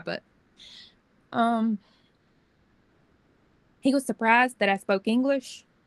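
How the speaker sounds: voice catching, choked up, on the verge of crying. Recounting a man insulting the speaker's kids, about to cry. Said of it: "I'm gonna cry".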